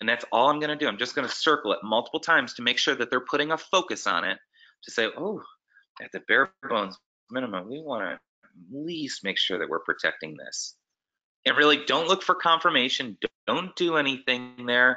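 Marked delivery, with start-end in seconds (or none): 5.2-10.8 very quiet muttering under the breath, quieter. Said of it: "kind of under my breath so they can hear me".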